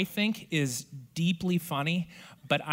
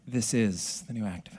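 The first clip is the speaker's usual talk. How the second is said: gloomy, slowed-down, morose voice; 5 semitones lower than usual. Demonstrating the voice used on the podcast The New Activist, slow and morose. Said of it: "You just slow it down a little bit".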